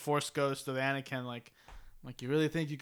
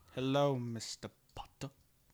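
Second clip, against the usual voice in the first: soft, choppy staccato, slow start, fast finish; 3 semitones lower, 6 dB quieter than usual. Trying to recall the actor's voice from a Family Guy voicemail skit, staccato Alan Rickman impression. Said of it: "there's like a staccato in it".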